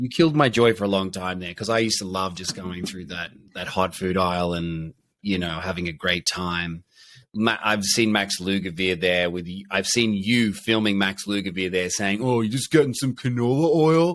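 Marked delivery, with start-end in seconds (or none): 12.2-14.2 disapproving, judgy bro tone. Imitating the other speaker scolding a shopper about canola oil: imitating Crosby as a judgy bro. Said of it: "me impersonating you, telling Lugavere".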